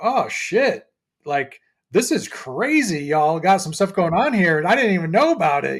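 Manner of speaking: mock amazed, stunned surprise. Retelling a musician's reaction on stage in brooklyn, imitating amazed surprise. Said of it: "you can hear it in the things that he's saying in his voice".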